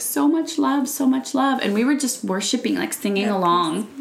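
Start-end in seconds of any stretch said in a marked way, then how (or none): 0.0-1.6 tearful, crying through words. A parent retelling what their child said during worship: imitating a child crying. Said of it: "and she's just crying".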